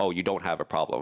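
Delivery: normal talking voice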